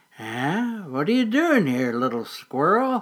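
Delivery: very kindly, gentle, friendly voice. An old mole speaks to a startled little squirrel, in a most kindly voice. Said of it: "asked the mole in a most kindly voice".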